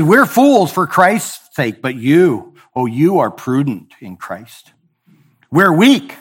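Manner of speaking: mocking, heavily sarcastic, swooping delivery. Reading the apostle's words to the church aloud: reading scripture sarcastically. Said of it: "He's being very sarcastic here".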